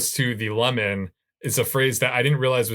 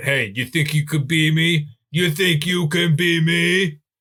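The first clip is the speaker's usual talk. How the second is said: put-on, slow, drawn-out way of talking; 4 semitones higher than usual. Repeating the line to show falling into the voice: impression of Bob. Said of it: "once you spend time with Bob, you just kind of find yourself falling into it".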